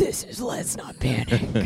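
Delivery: very low, slow, drawn-out sultry voice. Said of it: "So you decided to be like".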